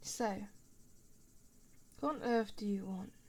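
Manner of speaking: put-on British accent throughout. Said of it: "I'm a bit of a shut-in ... british accent".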